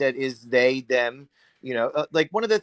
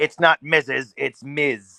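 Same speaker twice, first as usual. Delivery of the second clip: slow, stern, angry, snapping tone. Retelling how a teacher corrected students: imitating an angry teacher. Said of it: "In an angry tone".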